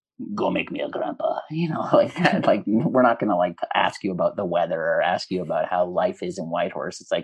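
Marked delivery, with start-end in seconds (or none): 0.3-1.4 put-on thick Greek accent, curt delivery. Speaker quotes their Greek-speaking father pressuring them, imitating dad's thick Greek accent. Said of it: "a thick accent".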